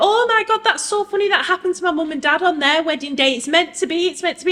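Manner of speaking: very high, laughing chatter through laughter. Retelling the bride's reply after hearing about the repaired cake: imitating the bride laughing while talking. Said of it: "The bride just pissed herself laughing and just went".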